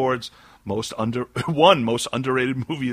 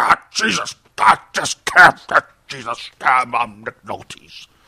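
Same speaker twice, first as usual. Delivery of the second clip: slow, loud mumbling; 6 dB louder than usual. Joking that an actor picked up mumbling: mumbling Nick Nolte impression. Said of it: "He's like".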